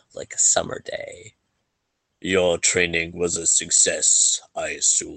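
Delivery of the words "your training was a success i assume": frosty, chilling, icy cold lordly tone. Narrator voices the lord addressing the party, in a cold voice. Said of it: "says with a uh, cold voice".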